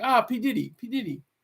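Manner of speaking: bad, terrible put-on German accent. Retelling what a kid from Germany said to him, in a terrible German accent. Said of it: "it's my terrible German accent".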